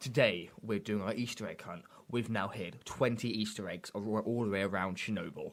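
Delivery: formal, low, soft radio announcer voice. Retelling a radio advert he heard, in a low, proper radio man voice. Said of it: "proper radio man voice".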